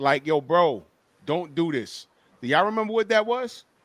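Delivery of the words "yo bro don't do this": put-on crying, slow, tearful pleading voice. Retelling own past plea about Bud to the chat: imitating own past crying. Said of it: "me, like, crying, like".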